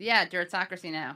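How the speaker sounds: ordinary talk, nothing marked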